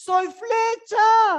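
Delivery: very slow, high, loud, drawn-out proclaiming cry.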